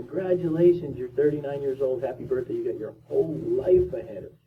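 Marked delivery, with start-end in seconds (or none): none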